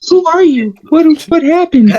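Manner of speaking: put-on startled, shocked tone. Acting out a made-up phone call as Missus Archie: playing the alarmed wife. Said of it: "I got".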